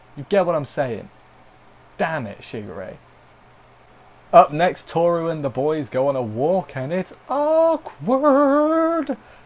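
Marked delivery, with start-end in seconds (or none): 7.3-9.2 very slow, cracking voice, pitched up. The speaker previews the next segment of the show, voice cracking. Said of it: "my voice cracked".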